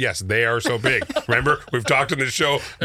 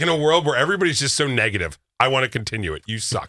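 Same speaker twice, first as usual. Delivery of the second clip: ordinary talk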